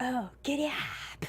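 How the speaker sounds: whispered words. Speaker retells a movie character trying to get a one-horse open sleigh moving: whispering. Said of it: "He's like whispering instead of yelling".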